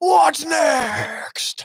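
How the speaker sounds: put-on belligerent screaming. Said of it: "you gotta scream it out belligerently".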